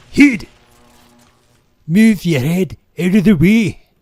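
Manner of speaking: bad Scottish accent, shrill, high and loud. Recalling the Scottish father from a film, in a really bad Mike Myers Scottish accent. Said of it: "That's a really bad Scottish accent".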